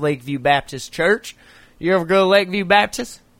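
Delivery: put-on Floridian Southern accent. Showing off an accent to the other speaker, in a Floridian accent. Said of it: "You like my Floridian accent?".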